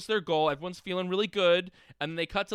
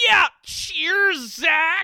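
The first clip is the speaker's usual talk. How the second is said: put-on mock American accent, higher and louder; 12 semitones higher, 10 dB louder than usual. Retelling a radio exchange, imitating Lando's mock American accent. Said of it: "He fully did a mock American accent".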